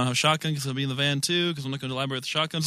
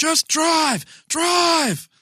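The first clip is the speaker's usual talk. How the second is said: shrill, very high, loud scream; 5 dB louder than usual. Urging the van driver during a fight: screaming in character. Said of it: "Just screaming".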